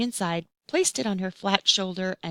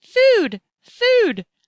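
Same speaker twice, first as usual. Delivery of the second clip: very high, tiny, peeping voice; 5 semitones higher, 6 dB louder than usual. A newly hatched baby bird cries out in hunger, demanding food, in a tiny voice. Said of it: "squawking to the Robot".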